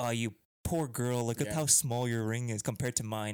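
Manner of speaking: mock condescending pity, passive-aggressive and mocking. Imitating a girl comparing rings with another girl: imitating passive-aggressive mocking. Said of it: "It's like it's passive aggressive".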